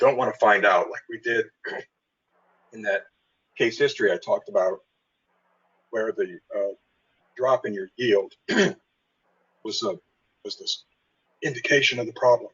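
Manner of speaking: voice fading and giving out. Explaining a case history to listeners, losing their voice. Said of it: "Sorry, I'm losing my voice".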